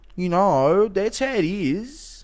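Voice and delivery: put-on slow, stretched-out, drawled Australian accent. Doubting a man's australian accent, speaker mimics the accent heard from him. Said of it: "This is the accent I hear from him".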